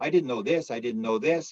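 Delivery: ordinary talk, nothing marked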